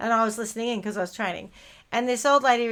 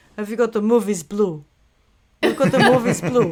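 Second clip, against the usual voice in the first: loud, put-on European accent; 8 dB louder than usual. Retelling what a caller asked on the phone: imitating a caller's European accent. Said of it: "much more, uh, European accent".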